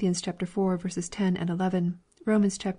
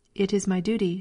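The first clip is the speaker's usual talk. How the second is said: ordinary delivery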